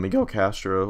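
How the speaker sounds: voice breaking mid-word. Picking a player and reading out his name, voice cracking. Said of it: "nice voice crack".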